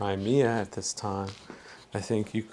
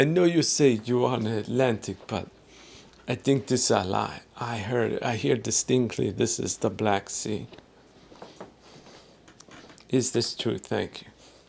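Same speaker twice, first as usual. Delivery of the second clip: heavy, strong put-on Eastern European accent. Reading out a listener's written-in question, attempting a strong Eastern European accent. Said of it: "this is my attempt at a strong Eastern European accent".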